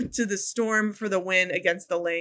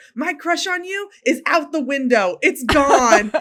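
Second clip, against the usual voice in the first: mock, slow, loud, drawn-out, pitched-up shout; 7 semitones higher, 5 dB louder than usual. Retelling a player's line during a scuffle: imitating a shout. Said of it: "shouted to Skylar".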